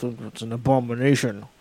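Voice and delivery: imitated muttering under breath. Retelling what a man muttered at a Pride event, retelling a muttered remark. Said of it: "he would mutter under his breath".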